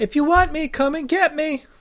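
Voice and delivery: small, tiny voice, pitched very high. Narrator voices someone behind the door to the left, in a small voice. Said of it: "you hear a small voice go".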